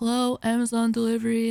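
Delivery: utterly bored, flat monotone delivery. Retelling a delivery driver greeting at the door, imitating a bored voice. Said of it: "like sounding bored as fuck".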